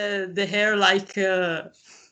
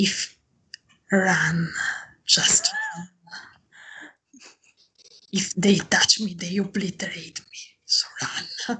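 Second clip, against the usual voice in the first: quiet whispering. Whispering a warning to Janina as others draw close: in-character whisper. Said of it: "I whisper so to".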